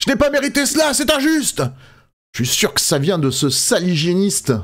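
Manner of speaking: furious, aggrieved, high-pitched tone. A player voices his character walking away after the encounter, furious. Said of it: "je repars comme ça, euh, furieux".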